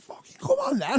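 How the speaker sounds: loud shout. Retelling a confrontation with a man walking backwards, retelling his own shout. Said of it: "so I started shouting".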